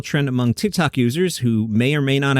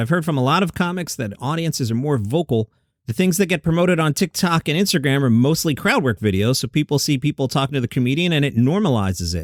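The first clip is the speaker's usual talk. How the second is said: ordinary delivery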